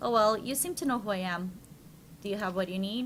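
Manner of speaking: plain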